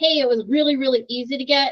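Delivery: plain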